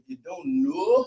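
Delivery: put-on New Orleans accent, very high pitch. Repeating the co-host's phrase the way they talk: imitating a New Orleans accent. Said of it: "that's how they talk".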